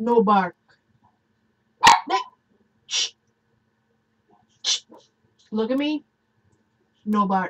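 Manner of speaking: stern, firm voice. Telling a barking dog to stop: stern voice. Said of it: "my stern voice".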